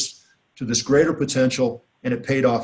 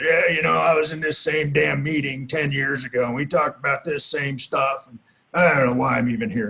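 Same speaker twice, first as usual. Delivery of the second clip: put-on rough, gravelly old man's voice. Retelling what an old man at the meeting said, gravelly old man voice. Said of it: "in his gravelly old voice".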